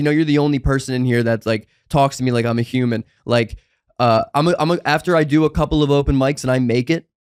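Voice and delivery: ordinary talk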